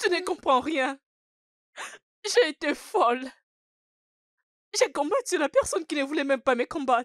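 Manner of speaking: high, sobbing outburst, crying through every word. Answering someone who keeps telling her to stop crying: crying. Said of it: "Arrête de pleurer".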